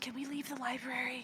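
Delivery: soft, hushed half-whisper, barely above breath. In a library with the group, half-whispering. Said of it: "It's kind of hard to whisper like this".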